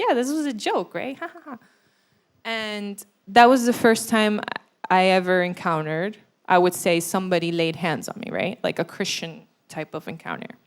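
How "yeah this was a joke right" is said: high voice, words spilling out through laughter. The speaker quotes his own reply to his laughing dad, retelling laughing while talking. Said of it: "I start laughing".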